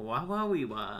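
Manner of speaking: slow put-on Kazakh accent, nonsense syllables. Telling the other speaker what their attempt sounded like, in a Borat voice. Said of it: "I guess I was trying to do more of a".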